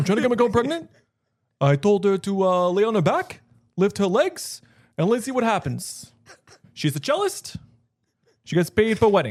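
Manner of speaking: loud, high voice, New York twang creeping in late. Doing an impression that another speaker praises: Bernie Sanders impression. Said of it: "That's a really good Bernie Sanders".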